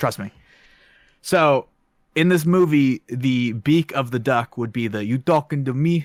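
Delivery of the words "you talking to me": put-on laid-on Italian accent, dramatic delivery. Quoting a famous movie line as an example: Robert De Niro line in Italian accent. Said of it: "I don't know why I did it with an Italian accent".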